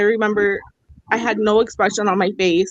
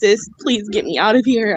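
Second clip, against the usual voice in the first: tearful pleading voice, slower. Speaker recounts running to their sister's car, unable to talk; retelling a tearful plea. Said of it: "I was just in tears".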